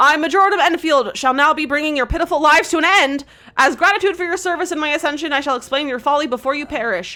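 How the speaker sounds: grandiose villain voice. The villain reveals himself to the 'pathetic mortals', booming Major Domo villain voice. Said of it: "A booming voice echoes in your mind".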